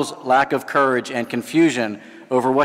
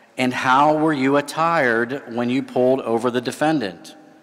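normal talking voice

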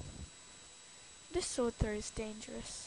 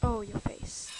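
ordinary talk, nothing marked

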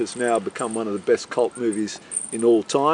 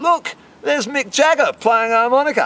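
loud, high-pitched yelling. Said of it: "he yells out".

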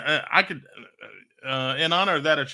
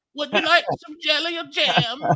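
very high, put-on grandmother's accent; 14 semitones higher, 4 dB louder than usual. Acting out someone offering Brad breakfast at home: put-on accent. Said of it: "But that accent".

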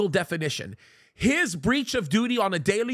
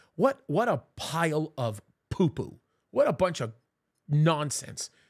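slow, somewhat worked up, a little emotional; 4 semitones lower than usual. Reacting to a speech being played: a little emotional. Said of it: "I'm a little emotional".

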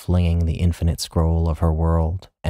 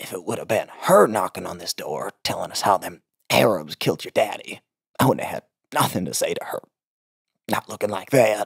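spat-out croak voiced while breathing in; 3 semitones higher than usual. Reading a story, voicing Jolene's mother speaking to Jolene: croaking, spoken on the inhale. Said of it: "Her mother couldn't muster the breath support to yell without triggering a coughing fit. ... Her mom liked to speak on the inhale, / her mother spat. / but still a croak. Her mother couldn't muster th".

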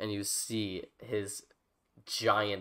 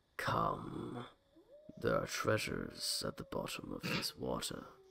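whispered, enormous underwater sea-creature voice; 10 semitones lower, 5 dB quieter than usual. Game master voicing an enormous underwater creature luring a player: enormous underwater creature voice. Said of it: "comes this enormous creature that stays around 100 feet away from you, still underwater, and you hear it say, "You smell like meat." You see it has these rows and rows and rows of sharp teeth. ... You can hear them going as you hear a much deeper voice".

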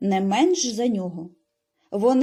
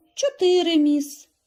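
tired, sighing, weary voice, slightly high; 7 semitones higher than usual. Reading a pupil answering the woman questioning him, after a sigh: weary. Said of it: "Пітер втомлено зітхнув".

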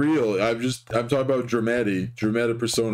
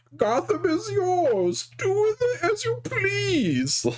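very high-pitched, grand, sweeping, declaiming villain voice. Retelling a character's speech to the people of Gotham, in a Bane voice. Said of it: "doing this guy as Bane".

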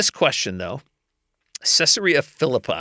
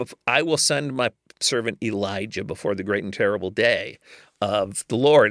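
normal talking voice

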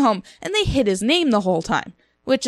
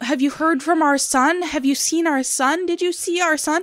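put-on pleading voice, higher, going on and on. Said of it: "Leia's just going on and on".

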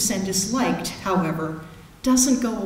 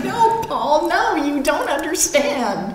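high-pitched yelling; 7 semitones higher, 3 dB louder than usual. Recalling hearing an interview while driving, retelling screaming at the radio. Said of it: "I'm screaming at the radio".

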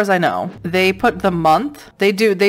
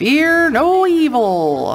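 raised western drawl, evil and stretched out; 8 semitones higher than usual. Looking for a locked door, the speaker mutters a line in a cowboy voice. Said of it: "I sound like a cowboy for some reason".

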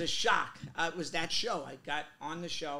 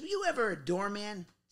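put-on casual tone in a Chicago accent; 4 semitones higher than usual. Retelling a question from Dennis, a TV actor: Dennis's Chicago accent. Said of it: "with a Chicago accent".

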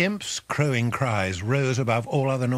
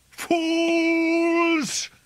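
shrill, very high, drawn-out owl screech; 3 dB louder than usual. Narrator reads the owl crying out over the stabbed smith: screeching owl. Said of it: "the owl screeched".

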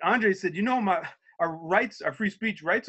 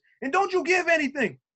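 yell, higher; 11 semitones higher than usual. Retelling a coworker screaming at them in a station: imitating someone screaming. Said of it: "he's screaming".

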